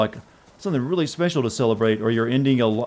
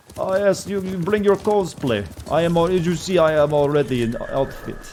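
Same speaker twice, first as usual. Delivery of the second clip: put-on vampire-count Transylvanian accent, pitched up; 6 semitones higher than usual. Luring unsuspecting victims to a castle: Count voice luring victims. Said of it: "the Count to lure in unsuspecting victims".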